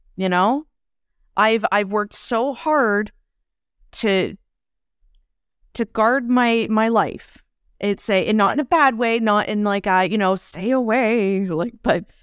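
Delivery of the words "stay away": sounding like a swamp witch. A speaker describing how she guards her life, in a swamp witch voice. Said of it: "I sounded like a swamp witch".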